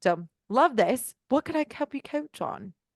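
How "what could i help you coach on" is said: high, playful, mock British accent. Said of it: "mock your accent".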